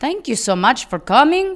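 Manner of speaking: loud, high, fake Southern European accent. Thanking people for coming to the show: put-on Southern European accent. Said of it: "You're going real Southern European".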